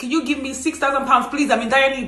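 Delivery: ordinary talk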